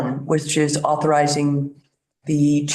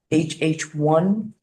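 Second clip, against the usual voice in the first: slow, deliberate, carefully spelled-out delivery. Presenting resolutions in committee for another member, speaking slowly. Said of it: "I'll say this slowly for you".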